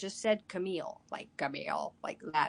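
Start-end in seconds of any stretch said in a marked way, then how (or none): 1.1-1.9 put-on robot voice, lower and quieter. Recalling a voice heard while paralyzed, imitating a robotic voice. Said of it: "like a robot sounding voice or an electronic voice".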